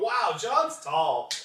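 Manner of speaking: put-on slow, loud, amazed little-kid voice.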